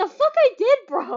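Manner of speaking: high loud indignant shouting.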